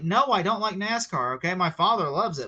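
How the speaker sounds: normal talking voice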